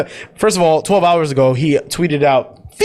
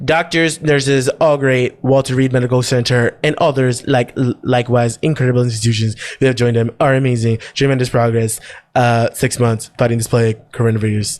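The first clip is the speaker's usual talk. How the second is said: upbeat, low, pleased politician voice; 5 semitones lower than usual. Quoting what he said at a briefing, doing an impression of him. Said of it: "You're such a great impression".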